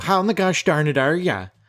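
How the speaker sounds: put-on Minnesota accent, laid on thick. A podcast host repeats their own non-cursing greeting to show how it sounded, in a very Fargo voice. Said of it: "It sounded very Fargo".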